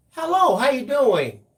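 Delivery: bright, firm, friendly, happy, nice, very high. Describing greeting someone at work who ignores you, acting out a nice, firm, happy voice. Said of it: "in a nice, firm, happy voice".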